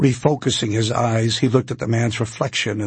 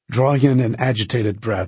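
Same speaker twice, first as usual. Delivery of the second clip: plain reading voice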